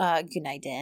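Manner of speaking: snarky passive-aggressive tone. Retelling a drama scene's greeting: imitating snarky passive-aggressive greeting. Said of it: "very snarky but passive-aggressive greetings".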